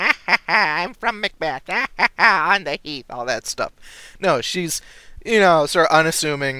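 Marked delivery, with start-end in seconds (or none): 0.0-3.1 put-on ugly old hag voice, high, cackling. Describing an untraditional witch, the speaker mocks the usual kind; cackling hag voice. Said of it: "an ugly hag who's all going around cackling".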